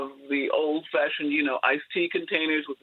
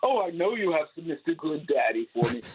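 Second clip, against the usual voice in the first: put-on booming bass voice. Quoting a friend of the parents asking for punch: Grace's booming bass voice. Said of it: "a booming bass voice".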